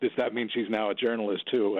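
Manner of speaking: ordinary delivery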